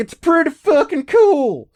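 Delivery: facetious gushing voice.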